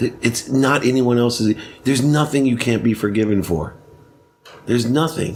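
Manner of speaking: ordinary talk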